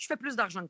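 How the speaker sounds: normal talking voice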